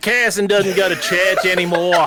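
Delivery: badly done, caricatured, put-on Australian accent. Reading out a redeemed message in a bad Australian caricature accent. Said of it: "he went with Australian".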